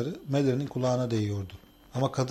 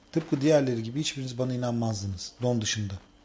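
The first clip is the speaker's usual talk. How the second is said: usual speaking voice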